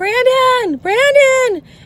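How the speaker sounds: put-on very high, shrill, urgent calling yell. Retelling a scorpion scare, calling for Brandon in the shower, retelling yelling for someone. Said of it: "I'm yelling for Brandon".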